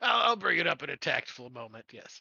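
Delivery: laughing while speaking. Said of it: "Orden cracks up".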